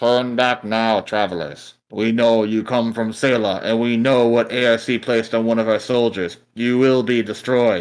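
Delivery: robotic machine voice. Narrator voices a robot appearing on multiple monitors, robotic voice. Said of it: "says in a robotic voice".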